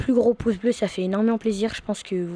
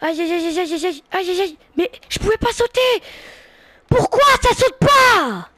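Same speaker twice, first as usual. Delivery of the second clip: very high, rising shout; 10 semitones higher, 7 dB louder than usual. Player in the middle of a game, yelling into the microphone. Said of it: "faut que je m'éloigne quand je crie".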